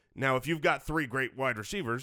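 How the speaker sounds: ordinary delivery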